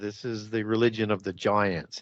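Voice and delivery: ordinary delivery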